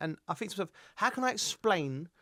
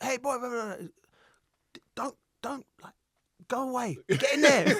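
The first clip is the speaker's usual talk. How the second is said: put-on aggressive shout, much higher and louder; 8 semitones higher, 5 dB louder than usual. Retelling a man who ran over telling him to get in there, aggressive shout. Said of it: "he said it with such aggression".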